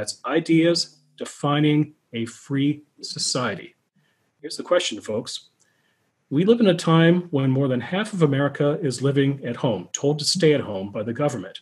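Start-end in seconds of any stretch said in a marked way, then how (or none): 0.0-3.8 slow, deliberate, emphatic. Speaker repeats the Hoover Institution motto for the audience, slowly repeated. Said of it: "Let me repeat that again slowly".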